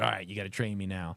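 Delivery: put-on snarky tone. Retelling a film scene where Tommy asks to be trained: imitating Tommy being snarky. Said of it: "he's kinda being, you know, snarky about it".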